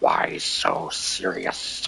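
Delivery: groveling villain voice, nasal, rough and creaky. Describing how the Joker talks, quoting his line: nasal Heath Ledger Joker voice. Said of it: "where it's kind of nasally".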